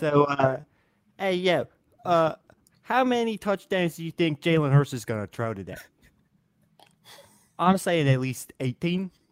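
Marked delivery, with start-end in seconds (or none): 1.2-9.1 put-on Delaware County accent. Mocking fans from outside philly, imitating how they talk. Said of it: "And they talk like this".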